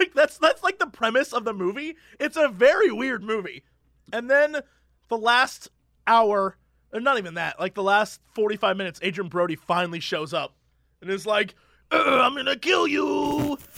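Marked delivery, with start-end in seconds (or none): 11.9-13.6 high-pitched, hammy, overacted menacing delivery. Describing a weird movie's ending, imitating Adrien Brody overacting. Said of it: "he's super overacting".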